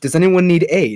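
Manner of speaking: loud, high yell, shouted from a distance. A traveler answers a voice calling from a cave, yelling back. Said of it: "I yell back".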